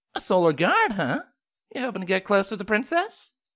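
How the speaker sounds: playful, teasing tone in a very high voice. Reading a story aloud, voicing one pony's question to a classmate, teasing. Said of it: "Sunny teased".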